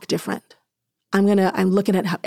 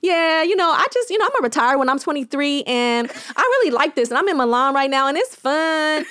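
put-on her own casual accent, higher; 6 semitones higher than usual. Retelling how she talked in interviews: imitating her past Inglewood LA accent. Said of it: "naturally my accent came out".

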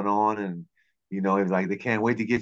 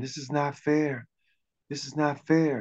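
mock crying, much higher-pitched; 5 semitones higher than usual. Recalling a man crying over a rejection for low GPAs, imitating someone crying. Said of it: "just crying".

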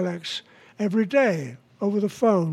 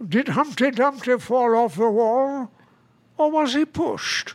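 put-on London Cockney accent; 3 semitones higher than usual. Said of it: "I like doing Cockney myself".

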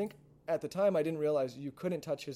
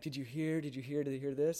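mock whispering voice. Retelling how everyone at christmas was gossiping: imitating people whispering. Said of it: "doing the little whisper".

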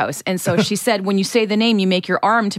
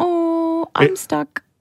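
put-on girl voice, much higher; 9 semitones higher than usual. Telling others what their Roomba says, quoting it in a Roomba girl voice. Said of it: "She talks to you in a girl voice".

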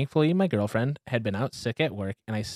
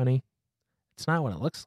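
gentle, soothing, calming, placating tone. Husband retells what he said to his furious wife, retelling his soothing tone. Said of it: "I said in my most soothing tone".

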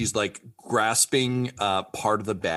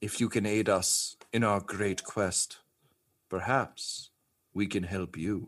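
fairy voice, quieter; 5 dB quieter than usual. Narrating a game, voicing a fairy heard inside the listener's head, fairy voice. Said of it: "You just hear".

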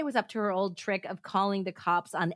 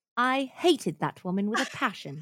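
clumsy, half-managed, bad put-on British accent. Asked where the british accent is, a speaker tries again: bad british accent attempt. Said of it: "Where's the British accent?".

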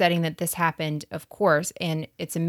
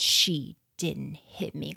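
mock-creepy gritted-teeth delivery, slower; 4 dB quieter than usual. Retelling what a man said about a woman who mocked him, imitating clenched-teeth speech. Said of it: "between his teeth, like his teeth were just clenched".

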